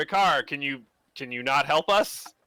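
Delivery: yelling. Yelling in character to a priest for help during an arrest: yelling. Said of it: "I'll yell to Vicar".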